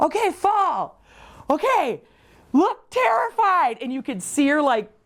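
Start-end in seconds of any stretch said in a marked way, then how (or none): 0.0-3.8 mock high, drawn-out yelling. Retelling directing friends while chasing them in woods: imitating own screaming. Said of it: "I was screaming".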